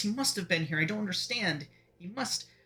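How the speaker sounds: nervous muttering. Voicing a character who stumbles in looking for someone: nervous muttering. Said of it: "you all hear a nervous muttering".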